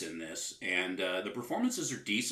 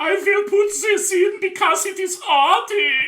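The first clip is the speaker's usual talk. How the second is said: very high, loud put-on German accent; 13 dB louder than usual. Imitating the film's director planning an arty scene: imitating director in German accent. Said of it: "with his German accent".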